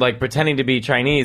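ordinary delivery

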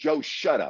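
mock screaming, high pitched. Retelling a speakerphone call, finally shouting back at Joe; retelling a scream. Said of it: "I scream at him".

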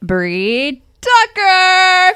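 high, slow, loud game show announcer. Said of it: "like to think of The Price is Right".

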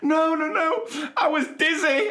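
mock tearful boy voice, very high, very slow. Retelling what a boy said while crying his eyes out: imitating a crying boy. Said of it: "So he's crying his eyes out".

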